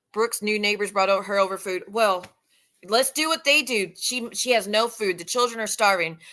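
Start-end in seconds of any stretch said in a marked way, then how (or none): none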